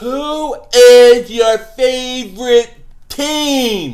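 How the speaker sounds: very slow, loud, spelled out letter by letter.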